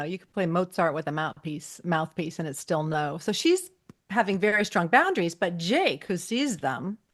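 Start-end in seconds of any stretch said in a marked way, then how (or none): none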